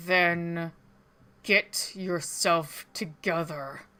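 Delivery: speaking through clenched, gritted teeth. Voicing a character who leans in close, cutting someone off: speaking through clenched teeth. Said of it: "speaks through his clenched teeth".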